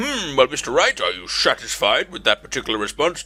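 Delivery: judge character voice, questioning tone. Playing the judge, addressing Mister Wright in court: judge character voice. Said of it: "Your Honor?".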